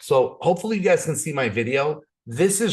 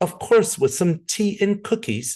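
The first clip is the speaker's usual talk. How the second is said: high, put-on, tongue-in-cheek British accent; 6 semitones higher than usual. Retelling own joking reply from last night: put-on British accent. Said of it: "that's my impression of trying to do a British accent".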